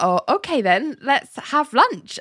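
mock awkward, uneasy tone. Retelling a character's answer to a lunch invitation: imitating an awkward reply. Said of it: "John awkwardly is like".

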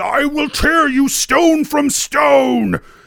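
high, loud, slow guttural yell.

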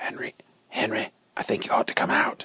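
very quiet, low, hushed, quick, hurried whisper. A guard comes in from the dark and rouses a sleeping man, low, quick voice. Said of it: "he called to him in a low, quick voice".

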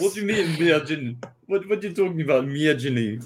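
put-on Russian accent. Hosts agree to all do accents tonight; teasing another speaker in a fake russian accent. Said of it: "We all do accents tonight".

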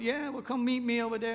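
put-on man speaking with a Cajun accent. Retelling a phone call with a neighbor selling firewood, Cajun accent. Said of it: "he's a Cajun man, and he talks like that".

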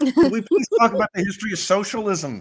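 exasperated pleading scream. Discussing an interview, the speaker reenacts their own reaction to it, retelling a scream. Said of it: "I was just like screaming".

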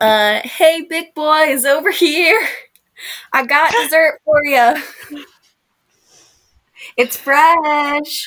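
high calling out. Player in a tabletop game, holding up a rat to circling ravens, yelling. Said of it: "I yell".

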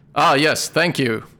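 loud, enthusiastic, eager character voice. Voicing a creature who takes offered rotting fruit: Zenarai's voice. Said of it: "says in Zenarai's voice".

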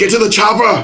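very loud, very high, barked, bellowing voice. Quoting a famous movie line: Arnold Schwarzenegger impression. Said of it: "the famous Arnold Schwarzenegger line".

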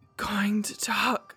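low, almost whispering voice. Reading a dramatic novel aloud, a weak coma patient speaks: low, almost whispering voice. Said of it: "he says in his low, almost whispering voice".

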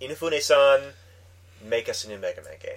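plain

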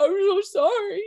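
very high, loud, garbled through a full mouth. Retelling a man's apology, imitating talking with mouth full. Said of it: "with his whole mouth full".

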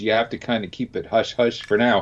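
ordinary delivery

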